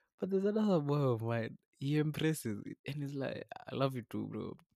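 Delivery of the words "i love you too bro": imitated weird, shaky voice. Retelling a friend's awkward reply to an unexpected "I love you": imitating a weird, shaky voice. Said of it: "it's all weird and shaky".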